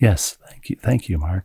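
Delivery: soft public-radio style voice. Podcast host thanks Mark, the resident statistician, in an NPR sketch-style voice. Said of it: "Is this now NPR Saturday Night Live sketch?".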